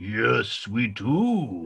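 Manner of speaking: very deep, slow undertaker voice, drawn-out do. Voicing an ant at the ant graveyard, answering another ant: undertaker ant character voice. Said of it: "You have the same voice as the undertaker".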